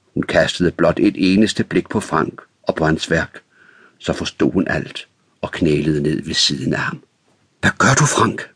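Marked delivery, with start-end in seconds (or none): 7.6-8.4 high, alarmed cry of fright. Narrator reads Ulla kneeling beside Frank, a frightened exclamation. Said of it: "Udbrød hun forskrækket".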